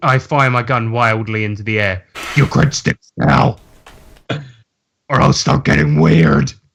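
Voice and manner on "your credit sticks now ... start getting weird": very deep, distorted, disguised voice-changer voice. Firing a gun into the air at everybody, with the voice changer on. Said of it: "I turn the voice changer on".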